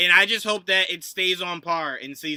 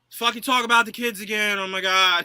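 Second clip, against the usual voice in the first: put-on grudging, irritated, reluctant complaining tone; 3 semitones higher than usual. Retelling how a stepdad reluctantly stands up for the kids: imitating an annoyed stepdad. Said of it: "He stands up and he's like".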